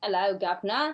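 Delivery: slight Cockney accent. Recalling the accent they had around age seven or eight: little cockney accent. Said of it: "So I had a little Cockney accent".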